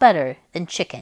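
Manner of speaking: ordinary delivery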